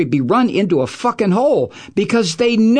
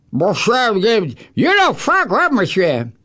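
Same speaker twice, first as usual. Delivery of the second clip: syrupy, syrup-throated mumble in a mock voice. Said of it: "a throat full of Vermont syrup".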